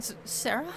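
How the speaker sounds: high, loud, startled panic, blurted out.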